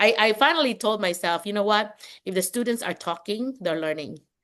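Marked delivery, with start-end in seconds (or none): none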